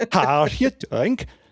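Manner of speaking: clumsy, bad, put-on Swedish accent. Speaker shows the greeting used to meet a lady: bad swedish accent. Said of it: "it's a bad Swedish".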